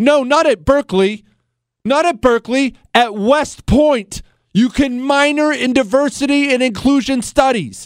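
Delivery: agitated. Complaining that West Point offers a diversity minor: upset. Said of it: "If I sound upset".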